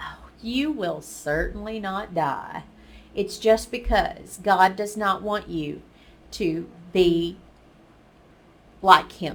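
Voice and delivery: plain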